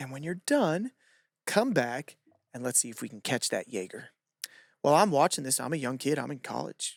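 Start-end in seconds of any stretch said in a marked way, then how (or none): 0.0-4.1 put-on smiling tone, quieter. Retelling what a coach said to a gymnast while smiling: imitating a coach's smiling tone. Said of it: "with this tone and this expression".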